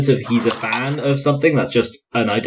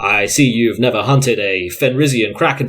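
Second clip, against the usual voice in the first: play-acted, very smug, superior tone; 4 semitones lower than usual. Retelling a book scene where a soldier answers a sorcerer: imitating a smug retort. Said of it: "very smugly goes".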